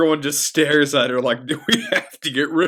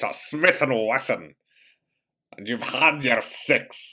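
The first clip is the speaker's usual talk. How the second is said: put-on Scottish accent; 3 semitones lower, 4 dB quieter than usual. After an impression of Davy Jones drifts more and more Scottish, do a Scottish Sean Connery impression. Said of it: "he's slowly becoming more and more Scottish".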